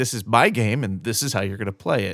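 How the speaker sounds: normal talking voice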